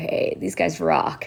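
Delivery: rough, low rock-singer voice. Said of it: "I just heard this deep, gnarly voice kind of go".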